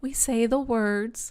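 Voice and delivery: put-on slow, small little girl voice. Retelling a man asking her in the tent; her reply in a little girl voice. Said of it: "she says in her little girl voice".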